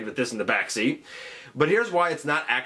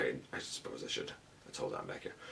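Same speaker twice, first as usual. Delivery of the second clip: ordinary delivery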